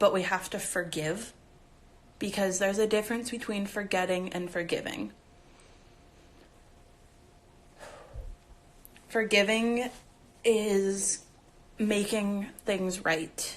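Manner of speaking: choked-up voice. Speaking while people keep telling the speaker to breathe, choked up. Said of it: "it just makes me choke up even more".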